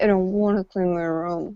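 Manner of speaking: very quiet mutter under the breath. Speaker demonstrating how a child answers a parent, muttered under breath. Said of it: "under their breath in a very quiet voice".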